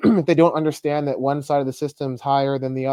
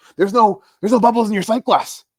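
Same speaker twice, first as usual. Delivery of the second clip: tense, pressured, stressed delivery with a raised voice; 8 semitones higher, 5 dB louder than usual. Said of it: "he'd say it, like, under stress".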